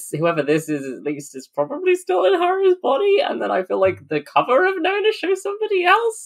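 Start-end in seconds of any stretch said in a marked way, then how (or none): 1.4-6.3 very high-pitched, sing-song, swooping voice. Talking through theories about a book with others, in a high-pitched voice.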